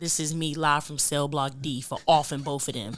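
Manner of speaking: mad, very loud, aggressive delivery. Introducing self on the show in a put-on, mad aggressive voice. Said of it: "you sound like Kanisha".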